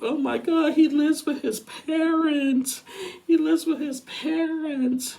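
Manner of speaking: play-acted sobbing in a very high-pitched voice. Retelling how someone cried in the bathroom: imitating someone crying. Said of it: "starts crying, saying".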